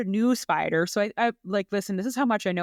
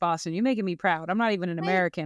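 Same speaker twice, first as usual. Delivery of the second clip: ordinary delivery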